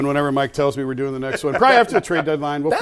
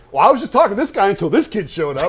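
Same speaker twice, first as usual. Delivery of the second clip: mock put-out, miffed, annoyed, pitched-up tone; 6 semitones higher, 3 dB louder than usual. Retelling how the player reacted when interrupted: imitating Kenny Lofton being mad. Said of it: "And you were so mad".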